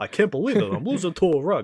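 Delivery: high, comic self-pity. Repeating Genie's line about losing to a rug: Rodney Dangerfield impression. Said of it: "He does the Rodney Dangerfield impression".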